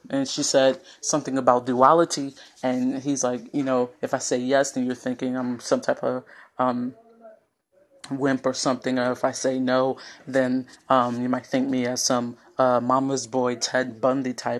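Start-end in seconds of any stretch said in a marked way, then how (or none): none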